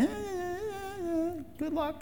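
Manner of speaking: high, soft, tossed-off mocking tone. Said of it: "Is God just taunting us, going".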